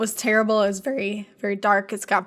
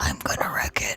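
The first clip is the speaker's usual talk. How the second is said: breathy, hushed whisper under the breath; 5 dB quieter than usual. Retelling what a character says in a scene; whispered. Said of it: "He just whispers".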